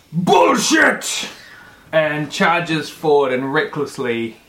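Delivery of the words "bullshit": very high, very loud, furious angry yell. Voicing a giant man who charges forward: giant man yelling. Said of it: "The giant man yells".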